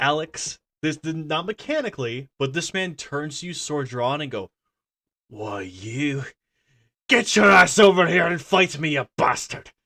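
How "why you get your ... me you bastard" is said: loud, furious, enraged snarl through gritted teeth. Voicing a soldier turning on a player, sword drawn: furious through gritted teeth. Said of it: "he's gritting his teeth and fucking pissed".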